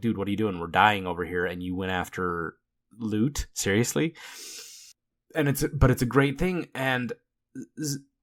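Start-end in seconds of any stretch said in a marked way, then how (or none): none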